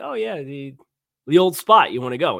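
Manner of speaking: loud, sarcastic, put-on tongue-in-cheek tone. Retelling how he teases his wife about the restaurant: imitating his own sarcastic asking.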